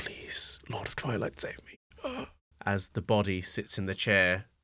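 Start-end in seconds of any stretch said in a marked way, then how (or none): 0.0-2.3 soft, hushed, barely voiced breathy whisper. Narrating a tabletop scene, voicing a face on a table, whispering. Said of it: "the face is whispering".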